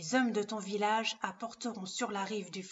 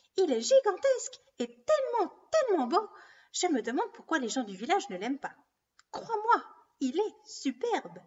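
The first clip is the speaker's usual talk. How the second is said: high, sing-song, sweet-talking and flattering; 9 semitones higher, 5 dB louder than usual. Narrator reading a story, one of two quarreling voices, high voice. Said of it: "la voix aiguë".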